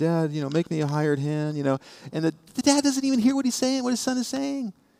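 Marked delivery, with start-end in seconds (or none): 0.0-1.6 play-acted meek, humble, self-deprecating tone. Retelling the parable, voicing the returning son: acting out a self-deprecating son.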